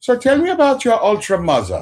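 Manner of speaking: very high, sing-song, swooping, put-on German accent. Joking about an ultra psychologist on a couch: german accent. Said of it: "an ultra with a German accent".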